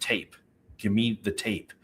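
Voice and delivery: put-on firm voice, quiet. Recounting what a strange man demanded of the speaker, retelling a firm command. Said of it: "he said it really firmly".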